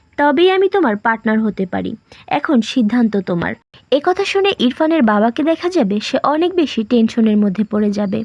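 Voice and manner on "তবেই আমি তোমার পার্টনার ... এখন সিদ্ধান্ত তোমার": ordinary talk, nothing marked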